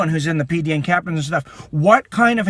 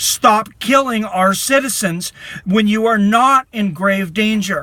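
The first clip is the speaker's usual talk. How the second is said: heated, upset, impassioned pleading tone; 3 semitones higher than usual. Addressing viewers of a video, upset and screaming. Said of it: "I think I'm too upset to finish this".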